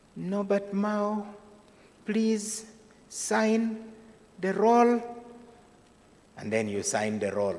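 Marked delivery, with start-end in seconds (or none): 0.2-5.1 tiny, very high-pitched, slow voice. Imitating the Chief Justice calling each person introduced in court, small voice. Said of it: "in his characteristic small voice".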